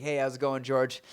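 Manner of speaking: ordinary talk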